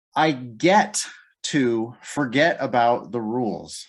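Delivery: stress on get, stretched out slowly. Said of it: "I wanna emphasize the word get".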